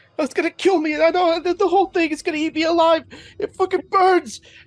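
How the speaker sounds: very high, shrill screaming and howling. Playing a character whose arm is burning: screaming and howling. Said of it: "screaming and howling".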